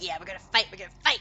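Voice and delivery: hissing goose voice. The speaker voices Sprinkles the goose as she hisses and wiggles: saucy hissing goose. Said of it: "she hisses and she wiggles her butt. She's like".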